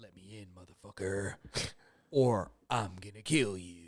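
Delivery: low, very quiet, menacing tone. Retelling a man demanding to be let into the speaker's house, in a low Quentin Tarantino movie voice. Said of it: "low kind of Quentin Tarantino movie voice".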